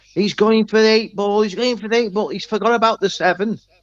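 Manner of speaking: commentator voice, high and shouted. Retelling how a commentator shouted during a championship frame, imitating someone shouting. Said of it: "And he shouts".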